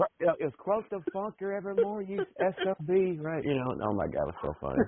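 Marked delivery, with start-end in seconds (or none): 0.4-3.2 put-on old wrestler voice, higher. Retelling a locker room promo when asked to do the voice: Terry Funk impression. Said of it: "Do the voice. I love your impression".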